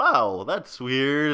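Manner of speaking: loud, exaggerated Canadian accent, brought right out. Retelling a friend's remarks in a shop: exaggerated Canadian accent. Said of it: "really bringing out the accent".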